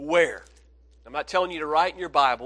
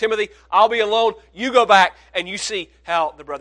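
loud, fast, rushed urgent delivery. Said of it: "So he said".

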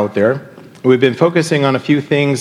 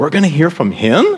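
uncertain, doubtful tone with rising lilt; 5 semitones higher than usual. Showing how simple words change with context: uncertain questioning tone. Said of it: "Maybe you put a question mark behind it, and you say it".

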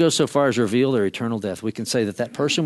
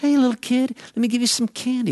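put-on sweet, coaxing, soothing tone, pitched up; 12 semitones higher than usual. Acting out a predator luring a child, in a put-on soothing voice. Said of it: "a kid is lured by a soothing voice".

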